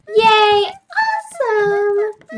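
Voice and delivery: voice cracking into a squeaky, high-pitched cheer. Cheering at the start of the show, voice squeaking. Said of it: "my voice just, like, squeaked like crazy".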